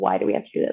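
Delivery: tearful, bawling, talking through sobs. Retelling being helped to stand after birth: imitating own crying. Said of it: "I'm just, like, bawling".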